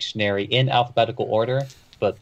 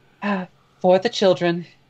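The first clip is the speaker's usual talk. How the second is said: resigned, giving-in voice, pitched way up; 9 semitones higher, 4 dB louder than usual. Voicing a character who looks at a bag: resigned mother's voice. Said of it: "a resigned mother's voice".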